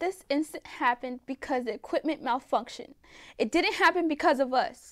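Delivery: piercing, shrill, very high-pitched voice. Reading a scene where a tearful nurse blames the equipment: shrill voice. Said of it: "Renee said in a shrill voice".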